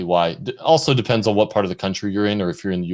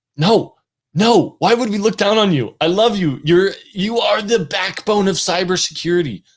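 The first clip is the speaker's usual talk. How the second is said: passionate, fervent, much higher pitch; 11 semitones higher, 5 dB louder than usual. Answering a question about not aspiring to management, passionate. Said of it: "I get passionate".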